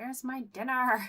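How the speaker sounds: mock very high, loud screaming. On stream, the speaker voices Emma yelling from the background, imitating Emma screaming. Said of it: "she's screaming at me in the background to be like".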